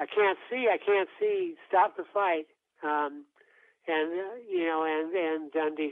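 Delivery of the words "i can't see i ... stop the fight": put-on loud, shouted, yelled outburst. Retelling how a blinded boxer begged to stop the fight, imitating someone yelling. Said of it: "And he's yelling".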